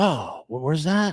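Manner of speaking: put-on confused, drunken voice. Retelling a phone call, imitating a confused drunk caller. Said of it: "He acted like confused, drunk, lost".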